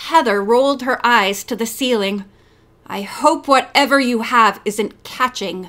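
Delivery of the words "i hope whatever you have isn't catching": frosty, chilly, icy cold tone. Narrator reading Heather's remark to Maggie, who has a cold; icy tone. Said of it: "she said icily".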